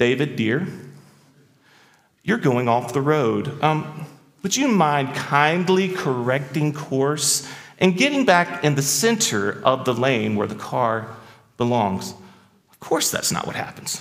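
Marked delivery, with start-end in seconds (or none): 0.0-12.1 mock gentle, saintly patience, calm and sweet. Acting out how she spoke to David as the car left the road, retelling calm words. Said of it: "calmly says".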